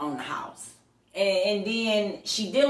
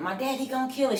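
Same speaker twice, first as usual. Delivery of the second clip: put-on scream, higher; 5 semitones higher, 3 dB quieter than usual.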